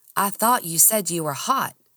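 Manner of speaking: plain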